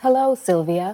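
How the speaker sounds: put-on robot voice, as if in a box. Greeting on command as Sylvia, a box: Sylvia robot voice. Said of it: "can't be a robot voice in a box".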